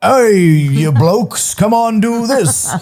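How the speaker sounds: very high, bad, failed, fake English accent. Recalling a movie character, the speaker quotes him in a bad attempted English accent. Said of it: "supposed to be an English accent".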